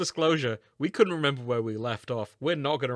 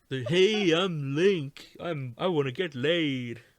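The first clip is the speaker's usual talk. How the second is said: obnoxious, annoying cartoon dinosaur voice; 4 semitones higher than usual. Trying the nineties cartoon character voice on request, obnoxious Link voice. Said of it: "sort of like Barney the dinosaur, but more obnoxious".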